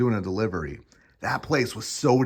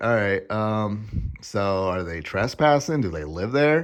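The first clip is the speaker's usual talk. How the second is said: put-on bored, indifferent voice, slower. Retelling calling the cops on a man kicking the door, imitating an indifferent cop. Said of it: "You could just hear in the voice".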